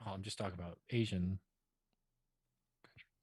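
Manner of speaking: low, soft murmur under the breath. Clarifying a remark to another speaker on a podcast, speaking low. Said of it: "Don't speak that low".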